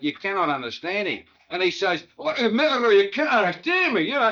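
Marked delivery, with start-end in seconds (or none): 2.2-4.1 put-on thick Glasgow accent, much higher, louder. Recalling an excited delegate from glasgow, imitating him in a thick glasgow accent. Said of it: "he goes right back to deep Glasgow".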